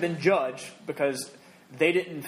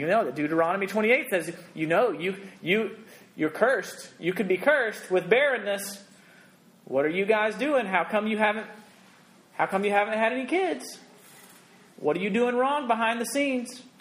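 put-on judgmental church lady voice, much higher; 5 semitones higher than usual. Voicing the church lady in their head about having no kids, mock-judgmental church lady voice. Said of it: "I have the church lady voice in my head".

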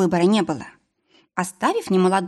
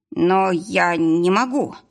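faltering babble, much slower. Asked by a trainee to let her through, a man babbles a refusal. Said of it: "залепетал тот".

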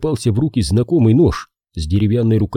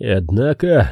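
scoffing, derisive, mocking snort. Shane turns and stares at the gentry, then answers him, mocking snort. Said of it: "насмешливо фыркнул он".

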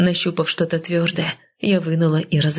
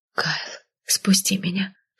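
whisper that quivers throughout; 3 dB quieter than usual. Held in her husband's arms, the woman speaks to him in a trembling whisper. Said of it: "шепнула я дрожащим голосом".

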